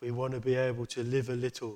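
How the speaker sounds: very loud, toneless, dead monotone drone. Recalling a funny tv insurance advert, quoting the husband in a dead monotone voice. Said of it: "the husband says in a dead monotone voice".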